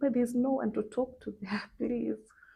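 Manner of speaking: desperate, high-pitched, begging, pleading voice. Retelling being taken to intensive care: imitating her own pleading. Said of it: "I was pleading".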